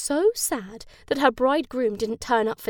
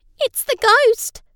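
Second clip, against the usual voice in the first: sudden very high exclamation; 12 semitones higher, 8 dB louder than usual. Reading a story, Ella cries out after the girls hear a scream. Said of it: "Ella cried".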